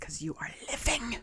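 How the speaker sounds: breathy, half-whispered growling snarl in a monster voice. Voicing a sword-locked undead foe answering a player: snarling in character. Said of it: "he kinda snarls at you".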